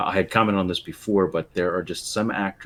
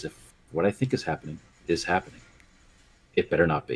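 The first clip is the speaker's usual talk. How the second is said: mock fast, dead-level flat deadpan delivery. Speaker quotes Felicity Fox catching Mister Fox in the kitchen, Felicity Fox deadpan line. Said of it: "in a deadpan voice".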